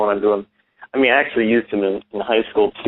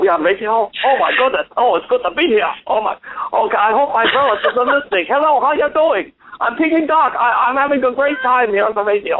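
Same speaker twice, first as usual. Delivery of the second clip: very high, squeaky puppet voice; 14 semitones higher than usual. Ventriloquist's duck puppet greets the radio audience, in Peking Duck puppet voice. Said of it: "your little buddy there, how he's talking".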